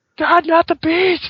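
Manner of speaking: put-on very high-pitched screaming wail.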